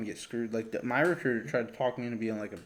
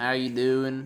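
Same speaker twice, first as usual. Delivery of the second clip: loud put-on country drawl with drawn-out words; 2 semitones higher, 5 dB louder than usual. Mocking a friend who starts talking country: George's put-on country drawl. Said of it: "draw his words out, start talking like this".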